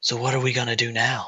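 soft, whispered speech. Voicing a woman who pins the listener onto a bed, whispering. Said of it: "kind of whispers".

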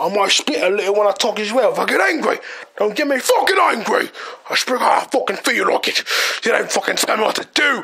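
put-on proper, posh English accent. Joking about having to speak properly in England: put-on English accent. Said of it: "Speak kinda like this".

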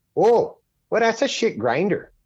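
high, put-on, Canadian-sounding accent. Retelling what a man said about the grinder he told him to buy; put-on Canadian voice. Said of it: "in his fucking Canadian voice".

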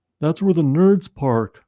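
mock kid's yell. Retelling how a kid yelled out a jeep window at him, retelling a kid's yell. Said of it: "a kid yells out the window".

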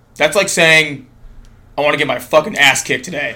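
dead serious, straight-faced deadpan. Retelling what a buddy said about brownies: imitating Ronnie's straight-faced delivery. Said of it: "with a straight face".

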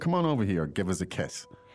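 ordinary talk

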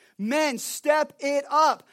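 very slow, deliberate, drawn-out shouting. The speaker turns to address the younger men directly, yelling. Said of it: "I'm yelling at the younger men".

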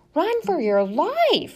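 shrill, very high, loud, drawn-out screech. As a brown and gray wave floods the deck, Sophia yells to Flora, screeching. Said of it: "she screeched".

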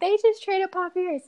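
mock-crying. Retelling a phone call to their mom: acting out crying. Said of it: "crying to her".

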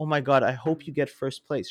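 mocking, sarcastic, fake-nice sweet voice. Mocking competitors who act falsely supportive: mocking fake-nice competitor. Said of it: "kumbayaing, being like".

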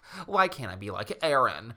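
ordinary talk

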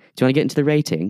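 poor put-on British accent. Switching into a put-on voice mid-conversation, in a bad fake British accent. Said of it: "I don't know what accent this is".

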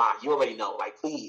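put-on irritated voice. Retelling a reply to ma about coming out: imitating own annoyed tone. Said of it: "I was annoyed".

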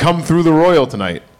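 ordinary talk

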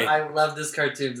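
ordinary talk

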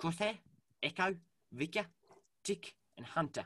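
strong New Zealand accent. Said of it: "Amiga's is really pronounced".

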